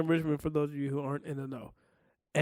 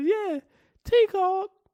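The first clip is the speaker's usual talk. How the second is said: very high, way up pitched voice; 4 dB louder than usual. Retelling what a sister said about a phone call: imitating sister's voice. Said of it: "your sister's voice".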